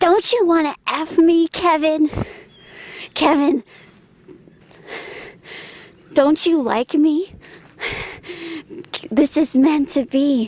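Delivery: inhuman, shrill, demonic creature voice. Retelling a frightening sound effect calling to Kevin, in a shrill demonic voice. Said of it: "it sounds so shrilled and demonic".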